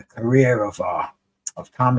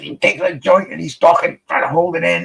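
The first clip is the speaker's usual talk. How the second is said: put-on strained politician voice, higher and louder; 7 semitones higher, 4 dB louder than usual. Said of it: "that's my R F K impression".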